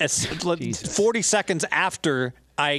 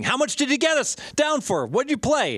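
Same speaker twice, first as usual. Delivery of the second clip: mock very high, shrill, frantic screaming; 9 semitones higher than usual. Retelling a betting buddy's phone call to the speaker, retelling his screaming. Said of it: "he starts screaming".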